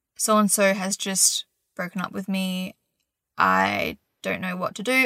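ordinary talk

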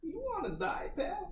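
put-on very high, menacing, threatening New York accent. Player in a roleplaying game intimidates someone in character, threatening New Yorker accent. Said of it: "switched to my New Yorker accent".

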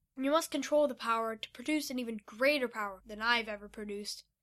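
ordinary delivery

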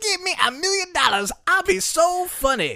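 very high, drawn-out comic voice. Quoting a line about a million dollars: Chris Rock voice. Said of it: "That was Chris Rock?".

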